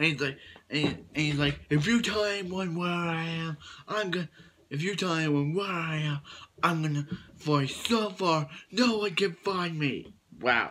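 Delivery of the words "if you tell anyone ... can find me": acted furious, heated, angry tone. Retelling a scene where Clark threatens to flee: imitating angry Clark. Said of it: "this Clark is really angry, as you can hear it".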